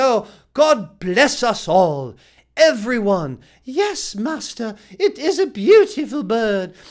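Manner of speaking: slow, terrible put-on English accent. Describing a Charles Dickens Thanksgiving dinner, the speaker puts on a terrible English accent. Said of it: "sorry to my friends in the U K for that terrible accent".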